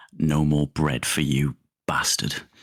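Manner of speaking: hushed whisper. Leaning down to Ricky in the scene, whispering. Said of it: "just gonna lean down and whisper".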